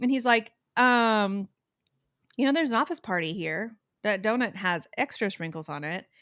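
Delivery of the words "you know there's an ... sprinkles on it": ordinary talk, nothing marked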